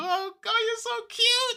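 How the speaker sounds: gushing, high-pitched mother voice.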